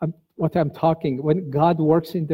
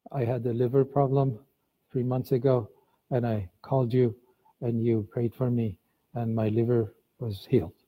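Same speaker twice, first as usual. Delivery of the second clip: put-on low, flat, emotionless monotone; 4 semitones lower, 5 dB quieter than usual. Recalling a broadcast caller with no emotion in his voice: imitating a flat monotone caller. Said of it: "he had no emotions in his voice, just monotone".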